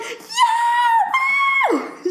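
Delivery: very high, shouted squealing. Retelling a movie scene where Pinkie Pie falls: imitating Pinkie Pie squealing. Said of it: "squealing like she's on a roller coaster".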